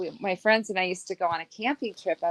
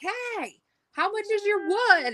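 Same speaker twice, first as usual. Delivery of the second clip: very high, drawn-out hollered yell; 14 semitones higher than usual. Retelling how a friend called out to a passing truck: imitating Krista yelling. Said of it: "she's yelling at the guy in the truck".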